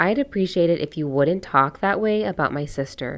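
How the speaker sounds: ordinary delivery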